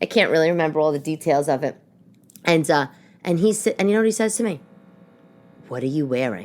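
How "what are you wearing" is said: mock disdainful tone, lower and quieter. Retelling what the husband asked when she came out: imitating a husband's disdainful tone. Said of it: "That immediate sound of disdain to his voice".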